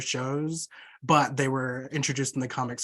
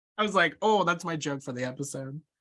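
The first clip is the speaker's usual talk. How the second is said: ordinary talk, nothing marked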